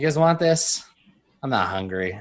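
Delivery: ordinary talk, nothing marked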